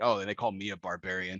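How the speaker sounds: very subtle, low, under-the-breath muttered aside. Retelling a film moment as the others are about to leave, muttered under breath. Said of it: "very subtle under his breath kind of like".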